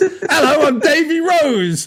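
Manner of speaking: put-on very high, very drawn-out, cheeky Cockney accent. Acting out a character bursting through a door: cheeky Cockney accent. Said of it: "little cheeky, cheeky Cockney".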